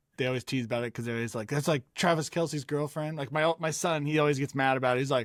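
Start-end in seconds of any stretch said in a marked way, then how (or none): none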